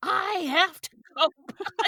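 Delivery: put-on screechy, shrill, very high three-year-old voice. Retelling standing up as a three-year-old during a movie to get attention, screechy, high three-year-old voice. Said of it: "in my best, most authoritative, screechy, high, three-year-old voice".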